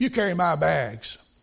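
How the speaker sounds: mock lordly, superior, haughty tone. Retelling how a big-shot preacher ordered a man at the station, mimicking a haughty command. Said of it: "he very haughtily said".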